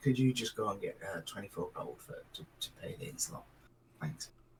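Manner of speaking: hushed, very quiet whisper. Voicing a character asking someone to fetch gold: whispering. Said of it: "just sort of whispers".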